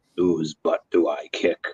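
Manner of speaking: big, deep cartoon-robot voice. Talking about favorite Transformers characters, Optimus Prime voice. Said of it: "with the deep Peter Cullen voice".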